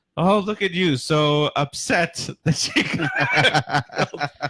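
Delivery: high, slow, teasing mockery through a laugh.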